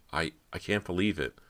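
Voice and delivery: ordinary talk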